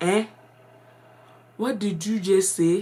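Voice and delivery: put-on changed accent with a Ghanaian tinge. Retelling how she answered the excited kids at church: imitating her own changed accent after Ghana. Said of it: "my accent had changed".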